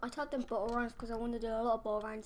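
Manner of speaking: talking really fast, rattled off.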